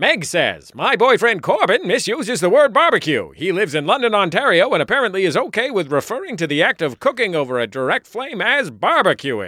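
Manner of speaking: put-on vintage, old-timey newsreel announcer narration voice. Podcast host demonstrating how the whole show could sound, newsreel voice. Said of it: "in a newsreel voice the whole time".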